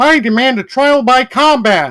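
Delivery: very high, loud, squeaky cartoon puppet frog voice. Trying another character after Mickey, at someone's suggestion, do a Kermit voice. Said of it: "let's try Kermit".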